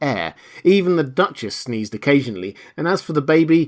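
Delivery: plain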